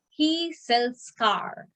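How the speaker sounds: slow, deliberate reading. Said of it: "The last sentence is".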